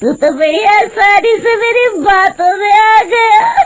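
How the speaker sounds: witch voice speaking through loud laughter. A woman who has turned into a witch speaks to Hariya, laughing loudly. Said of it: "देखते ही देखते उसका सुंदर रूप एक डरावनी चुड़ैल में बदल जाता है और वो जोर जोर से हंसती है। / तभी अचानक वो औरत हवा में उड़ने लगती है। देखते ही देखते उसका सुंदर रूप एक डरावनी चुड़ैल में बदल जाता है और वो".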